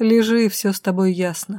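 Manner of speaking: usual speaking voice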